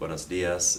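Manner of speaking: ordinary delivery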